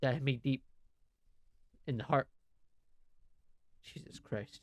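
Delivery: holding back tears, choked-up voice. Talking about a goodbye message he received, holding back tears. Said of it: "Give me a second".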